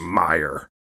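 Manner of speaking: "meyer" said throatily with scorn. Mocking someone by saying the name with throaty derision on "Meyer". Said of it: "throatily deride something as I just did lustily".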